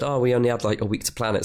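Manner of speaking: ordinary delivery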